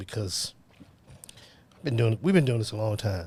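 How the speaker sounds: emotional, choked-up voice. Reflecting on having done this work a long time, getting emotional. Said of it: "I'm getting emotional, man".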